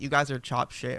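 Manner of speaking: ordinary delivery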